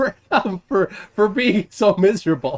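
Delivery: speech broken by laughter. Reacting to a man being called miserable, laughing while talking. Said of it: "I'm laughing pretty stinking hard".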